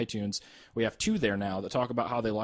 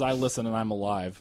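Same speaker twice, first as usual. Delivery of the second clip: ordinary talk, nothing marked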